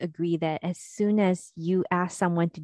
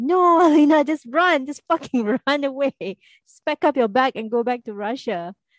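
mock frustrated, high-pitched shouting; 7 semitones higher, 6 dB louder than usual. Describing watching the show, the speaker acts out shouting at the TV. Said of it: "you're like shouting at the TV like".

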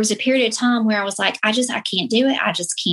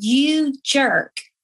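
restrained, held-in mild insulting yell; 4 semitones higher than usual. Retelling yelling at his grave; retelling a yell. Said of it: "I yell".

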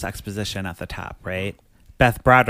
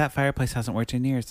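ordinary talk, nothing marked

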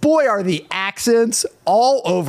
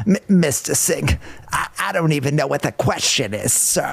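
put-on old, lifelong chain-smoker voice; 5 semitones lower than usual. Mimicking how someone said a line to Mr. Singh, in an old lifelong-smoker voice. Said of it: "an old man who has been smoking most of his life, or like a New Yorker".

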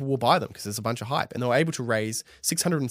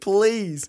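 mock pleading, higher and louder; 9 semitones higher, 6 dB louder than usual. Imitating the company calling Redditors back through a megaphone: imitating begging. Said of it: "absolutely begging".

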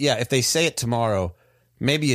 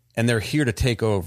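usual speaking voice

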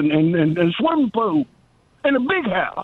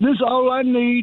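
very high-pitched whining voice. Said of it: "kinda like Steve Martin in The Jerk".

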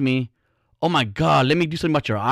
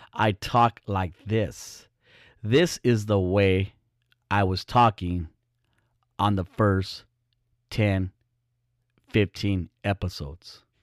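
slow, unhurried, deliberate and drawn out; 5 semitones lower, 4 dB quieter than usual. Host showing how they talked in their first episodes: imitating own old slow talk. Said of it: "I talk a lot slower".

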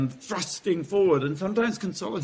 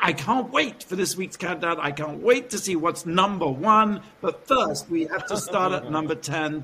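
normal talking voice

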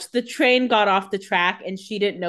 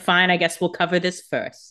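normal talking voice

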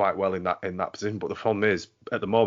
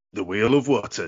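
loud, dramatic, theatrical game-show announcer voice; 5 dB louder than usual. Announcing the game segment, the wheel of wootton, in a dramatic announcer voice. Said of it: "So dramatic".

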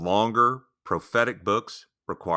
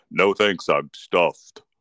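loud, put-on teddy bear voice; 6 dB louder than usual. Walking past a girl's pretend tea party, answering for her teddy bear, bear voice. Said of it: "in my best bear voice".

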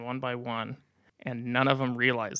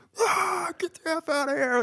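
mock very high, wild madman scream. Retelling chasing kids out of the yard: imitating yelling like a madman. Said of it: "yelling like a madman".

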